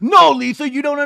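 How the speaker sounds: heated, loud, high-pitched yell, cut off short. Retelling a reality show fight, imitating Sandoval yelling. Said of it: "Sandoval yelling at Lisa".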